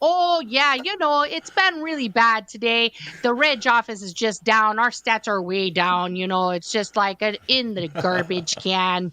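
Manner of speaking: put-on Midwestern accent. Retelling chatting with a coworker in a put-on Wisconsin accent. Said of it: "we would talk to each other like this".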